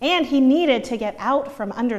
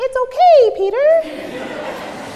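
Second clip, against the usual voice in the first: put-on very high, loud, child-like soothing comforting voice; 14 semitones higher, 7 dB louder than usual. Retelling how a young son comforts his baby brother: imitating a child's high-pitched comforting voice. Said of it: "his comforting Peter voice is very high-pitched".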